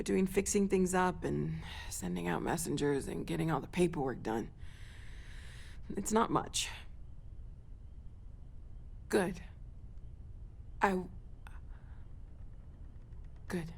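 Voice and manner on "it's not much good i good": choked up, near tears, quieter. A character talks about fixing up the old building: close to crying. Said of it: "if I talk any longer, I'm gonna start crying".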